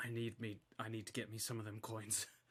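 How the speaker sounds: very quiet, hushed half-whisper. Voicing a character who leans over to another character: half-whispering. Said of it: "he actually leans over and whispers to Shylock".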